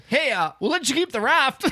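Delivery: terrible fake Canadian accent. Hosts riffing on a news report, one answering in a bad Canadian accent. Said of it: "these accents are terrible".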